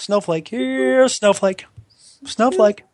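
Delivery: very high comic movie-character call. Doing a line from Ace Ventura about snowflakes: Ace Ventura voice. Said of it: "Like from Ace Ventura".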